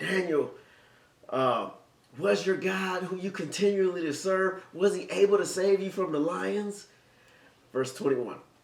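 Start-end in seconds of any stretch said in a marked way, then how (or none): 0.0-6.9 high, howling, grief-stricken scream. Preacher recounting the king crying out to Daniel: acting out a grieving scream. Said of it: "he screams out".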